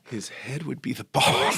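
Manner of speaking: whispered slowly. Closing eyes before saying the line, in a slow whisper. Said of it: "close my eyes and just whisper this slowly".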